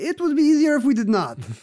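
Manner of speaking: very high-pitched, badly done fake Italian accent. Imitating what those people would all say, in a put-on italian accent. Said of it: "What kind of accent was that?".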